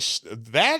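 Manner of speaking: usual speaking voice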